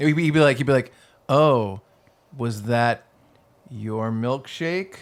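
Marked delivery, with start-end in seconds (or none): 1.3-5.0 very slow, stretched-out taunting. Imitating a taunting line about a stolen milkshake. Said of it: "he's taunting".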